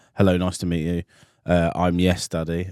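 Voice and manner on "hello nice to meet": usual speaking voice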